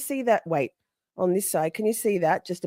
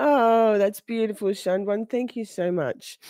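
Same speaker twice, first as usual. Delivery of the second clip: talking while crying, through tears; 3 semitones higher than usual. Speaker reacts to something sent to them: crying while talking. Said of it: "when I'm crying".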